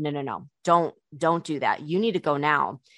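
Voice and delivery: put-on, very serious, insistent tone. Quoting what a woman told the speaker, imitating someone super serious. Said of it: "she got super serious".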